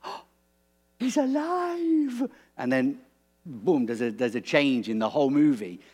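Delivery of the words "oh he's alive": very high, thrilled, lively, drawn-out exclamation. Retelling the movie moment Rafiki learns Simba is alive, imitating Rafiki's excitement. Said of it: "he's like getting so excited".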